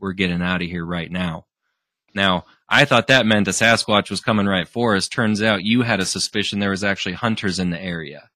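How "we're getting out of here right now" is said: put-on whisper. Retelling what someone told the group in the dark woods: imitating a whisper. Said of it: "quietly in a whisper".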